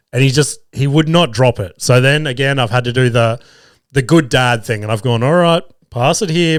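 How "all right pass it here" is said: mock dopey, pitched-up, clueless, playing dumb. Retelling agreeing to drink from the son's can: imitating playing dumb.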